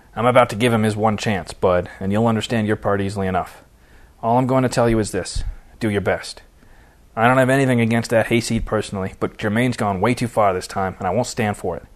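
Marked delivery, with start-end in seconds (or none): none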